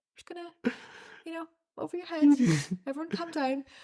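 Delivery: mock very calm, slightly high, reassuring tone. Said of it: "Craig just very calmly just".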